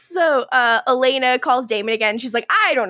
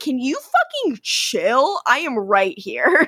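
put-on sassy tone, slower pace. Recapping a TV show, voicing Matt snapping back after being shouted for; imitating Matt's sassy retort. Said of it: "He gets very sassy here".

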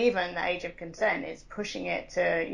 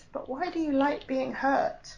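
mock concerned, high, sad and worried voice; 7 semitones higher than usual. Retelling a woman's reply after the speaker talked about BDSM, imitating a sad, worried voice. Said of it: "in a really like sad and concerned and worried voice".

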